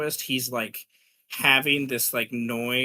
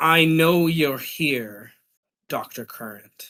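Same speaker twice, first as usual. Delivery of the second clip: put-on doubled, two-layered voice; 6 dB louder than usual. Narrating a scene, voicing a character's line in a double voice. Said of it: "says in like a double voice".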